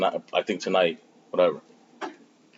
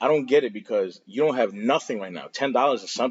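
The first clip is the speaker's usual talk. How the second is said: ordinary talk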